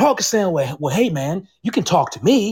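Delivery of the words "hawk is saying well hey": ordinary delivery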